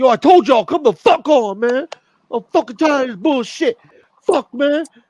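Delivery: shrill, loud, high, fed-up yelling. Retelling how Tracy Morgan snapped at his crew on the stairs: imitating angry Tracy Morgan. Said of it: "And he was pissed off".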